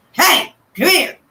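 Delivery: serious, stern, no-nonsense, calling out. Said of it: "Pimp has a very stern voice when he talks".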